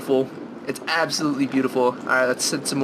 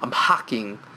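low, fake put-on British accent; 4 semitones lower than usual. A gamer commenting on a map mid-stream, put-on British accent. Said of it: "I don't know why I said that in such a British voice".

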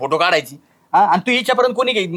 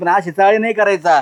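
ordinary delivery

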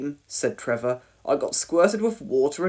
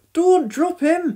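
very high, loud, anxious worried cry; 13 semitones higher, 5 dB louder than usual. Narrator reads Dillis as Penny carries Norman down the ladder, crying out anxiously. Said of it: "cried Dillis anxiously".

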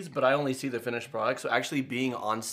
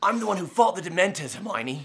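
put-on higher-pitched British accent; 6 semitones higher, 3 dB louder than usual. Showing off the one British accent they can do: a Harry Potter British accent. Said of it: "Harry Potter is literally the only British accent I can do".

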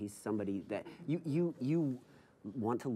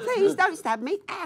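loud pleading voice at the top of the range; 13 dB louder than usual. Joking about not wanting to sound like Dobby: Dobby voice. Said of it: "sounding like Dobby".

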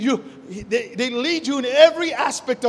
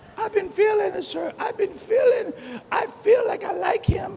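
crazy, wacky put-on voice, much higher; 8 semitones higher than usual. Speaker mimics the young people he counsels, in a crazy voice. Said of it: "I'm just using a crazy voice right now".

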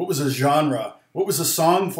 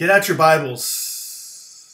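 put-on long, drawn-out hissing s sounds, louder; 3 semitones higher, 4 dB louder than usual. Retelling how a church pastor let his s's go on forever: imitating a pastor's drawn-out s's. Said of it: "he would let his S's go forever".

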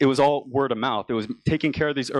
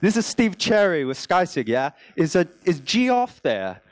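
fake British accent, pitched much higher; 5 semitones higher than usual. Retelling a phone call made under a fake name, fake British accent. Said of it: "with a fake British accent that was a bit of a mix".

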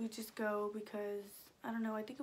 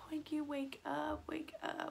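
put-on frantic, high, panicked, drawn-out crying plea; 5 semitones higher than usual. Retelling trying to wake poinky up, retelling panicked pleading. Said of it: "So I was panicking".

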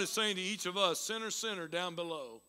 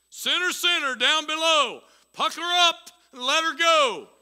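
big, very loud, booming heavenly voice; 9 semitones higher, 10 dB louder than usual. Telling a made-up story, voicing the answer from the heavens in a big booming voice. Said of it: "this big booming voice".

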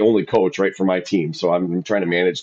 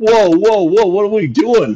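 mock yell, much higher, louder; 13 semitones higher, 6 dB louder than usual. Speaker recounts running over to a man yelling at crying kids, retelling own yell. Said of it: "I'm like yelling".

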